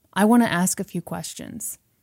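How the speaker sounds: ordinary delivery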